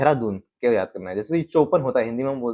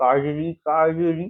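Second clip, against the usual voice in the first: put-on elderly man's voice, much higher pitch; 5 semitones higher than usual. Describing studying history, speaker imagines an old uncle calling out: old uncle's voice. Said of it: "बूढ़े uncle को imagine कर लेता हूँ... ये accent".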